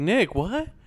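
baffled, lost-sounding tone. Retelling how someone answered when confused: imitating a confused question. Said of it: "when he was so confused".

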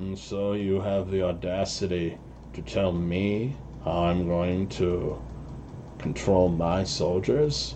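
really harsh voice, muffled through a mask. The storyteller voices a figure speaking to Pyralis, harsh voice through a mask. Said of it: "really harsh voice that almost sounds like it's maybe speaking through a mask".

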